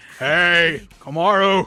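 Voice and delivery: put-on deep, burly voice. Voicing a game character calling out a greeting, in a deep burly voice. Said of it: "deep burly voice".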